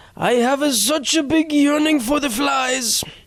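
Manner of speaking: bad, failed Japanese accent, very high. Imagining a frog speaking English, bad Japanese accent. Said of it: "That wasn't Japanese anymore".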